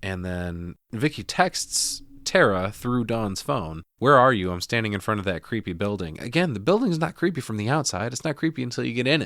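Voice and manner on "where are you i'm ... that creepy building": normal talking voice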